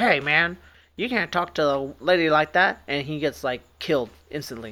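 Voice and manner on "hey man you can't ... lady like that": mock curt, snippy, snappy, drawn-out delivery. Retelling a favorite movie scene with an archaeologist: imitating a snappy retort. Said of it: "being all snappy, like".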